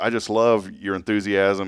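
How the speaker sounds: usual speaking voice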